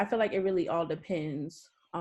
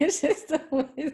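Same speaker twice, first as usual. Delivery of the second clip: laughing while talking, higher and louder; 8 semitones higher, 4 dB louder than usual. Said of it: "I didn't mean to laugh".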